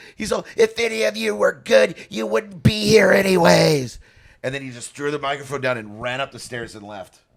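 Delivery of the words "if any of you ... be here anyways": put-on, shrill, very high, loud screaming outburst. Retelling a heckled drunk comedian's outburst on stage: imitating someone screaming. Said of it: "to the point where he started screaming".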